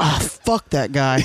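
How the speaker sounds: slow, laughing delivery.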